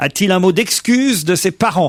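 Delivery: normal talking voice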